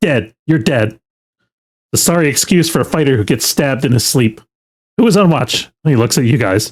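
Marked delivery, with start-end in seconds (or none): 0.0-5.6 spitting scorn, contemptuous, barking drill-master voice. Voicing a master who wakes the fighter after a stabbing: barking with contempt. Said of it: "he barks at you, practically spitting with contempt".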